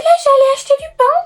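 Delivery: super high put-on voice. Showing how they sometimes talk, in a super high-pitched voice. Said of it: "on parle avec une voix super aiguë en mode".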